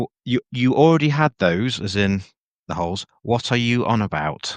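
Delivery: slow, deliberate, spelled out word by word. Repeating an earlier remark for everyone, said slower. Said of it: "So I'll say it slower for everyone".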